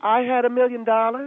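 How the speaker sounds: upspeak lifting "dollars", rising like a question. Imitating someone who makes everything sound like a question: question-like rise on dollars. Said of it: "You make everything sound like a question".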